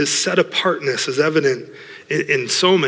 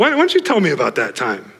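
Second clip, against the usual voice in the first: put-on sarcastic voice. Speaker retelling God's words to Job, acting out sarcasm. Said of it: "he gets a little sarcastic even with Job".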